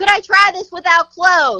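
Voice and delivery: loud, high voice over the microphone. Retelling what a second girl asked on the mic: imitating a loud line. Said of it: "loud on the mic".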